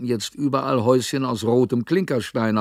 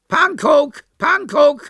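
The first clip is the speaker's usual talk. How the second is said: shrill, croaking, very high, loud parrot squawk; 6 dB louder than usual. Parrots in baskets calling as Hannes climbs into the van, parrot squawk. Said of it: "krächzte es aus 31 Körben".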